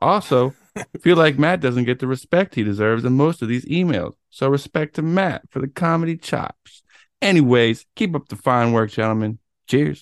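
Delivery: put-on Northwest accent with swagger in the delivery. Podcast host reads a listener email aloud, imitating Russell's Northwest accent. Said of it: "I took on a little persona".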